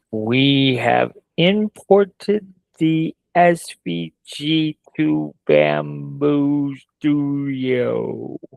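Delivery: carefully slowed down, slow and deliberate. Asked to say it real slow, speaker repeats the sentence, said real slow. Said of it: "Say it real slow".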